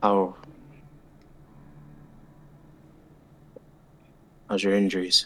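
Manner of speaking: hushed, soft, barely audible half-whisper. A character hangs back beside a woman to ask about her injuries, half-whispering just enough to hear. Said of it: "he kind of whispers just enough for her to hear".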